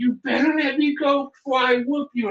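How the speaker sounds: play-acted, very high-pitched screamed yelling. Retelling a man he held upside down yelling at him: imitating a man screaming. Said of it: "And he's screaming".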